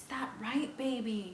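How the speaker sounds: snide, menacing, hissed jeering. Narrator reads a tormentor taunting a boy pinned to the floor, hissed. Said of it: "he hissed".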